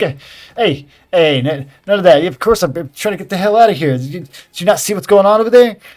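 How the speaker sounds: acted surprised character voice. Voicing a startled man who bumps into a player character. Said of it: "He's like".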